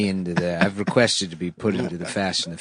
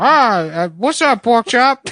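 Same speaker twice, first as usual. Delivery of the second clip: very high, loud, called-out delivery; 8 dB louder than usual. Deliver from memory what the actor says as one of his classic lines, Tom Hanks impression. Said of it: "Tom Hanks says".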